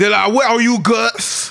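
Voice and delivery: high-pitched, slow Cajun drawl in alligator voice. Speaker imagines what the alligators would say, alligator with Cajun accent. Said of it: "alligators have like Cajun accents".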